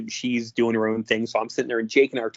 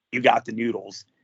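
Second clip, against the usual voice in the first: slow, drawn-out low voice. Retelling what a wrestler said to the camera, low Jake Roberts drawl. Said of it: "the low Jake Roberts drawl the entire time".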